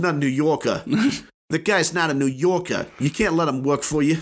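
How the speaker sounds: put-on high-pitched Boston accent. Playing someone calling an employer to complain about his employee; Boston accent. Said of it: "I'm saying this in a Boston accent".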